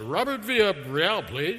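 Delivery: polished professional phone voice. Calling the lab and asking for the physicist, in the most professional voice. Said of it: "put on my most professional voice".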